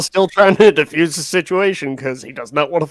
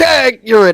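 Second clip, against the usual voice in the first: shouting, pitched high; 7 semitones higher, 4 dB louder than usual. Playing a character who touches a creature and takes off: shouting. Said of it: "and shouts".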